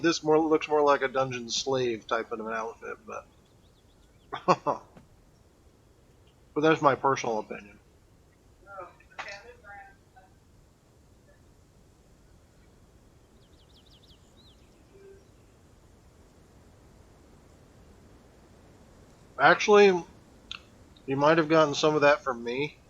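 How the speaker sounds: mumbling through food while eating. Giving a personal opinion on an outfit while eating, mumbling through food. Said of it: "I'm sorry if I'm kind of mumbling through my food".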